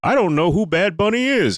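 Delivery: very high, mocking, put-on caricature voice. Retelling a Facebook post, imitating a Facebook poster's voice. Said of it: "I don't know why I did that voice".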